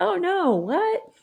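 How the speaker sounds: shocked high squeak.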